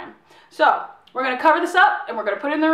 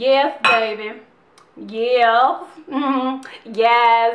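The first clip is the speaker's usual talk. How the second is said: deep, very slow, drawn-out silly voice; 4 semitones lower than usual. Stirring buttermilk and talking to the food: put-on stirring buttermilk voice. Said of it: "This is my stirring buttermilk voice".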